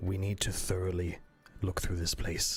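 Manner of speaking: hushed, leaning-in stage half-whisper. Role-playing a character with a hand on the bird's shoulder, half-whispering. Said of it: "just kind of whisper like".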